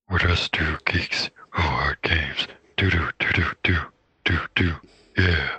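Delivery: extremely low demon voice. Handed the mic for a Memorial Day message, answers in a deep Golgoroth demon voice. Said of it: "I don't know how your voice goes that deep".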